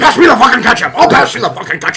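play-acted angry shouting. Acting out people arguing at a dinner table: imitating angry shouting. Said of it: "everybody just seems so angry in that movie".

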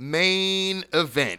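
shouting. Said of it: "why you yelling at us?".

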